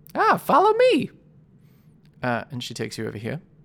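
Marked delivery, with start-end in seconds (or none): 0.2-1.1 put-on southern belle voice, much higher. Game master voicing Layla the lizard for the players, in Layla's Southern belle voice. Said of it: "trying to be like some kind of Southern Belle".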